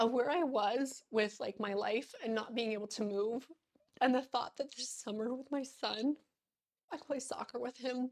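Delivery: high, tearful speech while crying. A mother speaking about her recovery, crying while talking. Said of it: "I hate being like crying".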